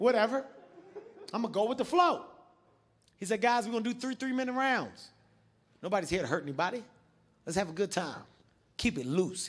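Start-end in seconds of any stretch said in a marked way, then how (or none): none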